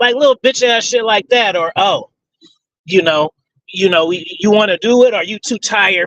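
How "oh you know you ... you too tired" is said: patronizing, condescending, talking-down tone. Retelling how an ex-partner used to talk: imitating a condescending tone. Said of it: "It would be a real condescending tone".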